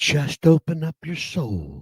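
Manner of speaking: soothing, calm therapist tone. Mocking a TikTok man who acts like a therapist: imitating Michael Gallion's calm therapist talk. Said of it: "and he talks like this".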